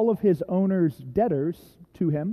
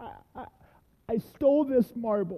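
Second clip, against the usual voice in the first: put-on trembling voice, high, words coming slowly; 5 semitones higher, 4 dB quieter than usual. Retelling confessing to a store clerk, re-enacting a quivering voice. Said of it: "and my voice quivering".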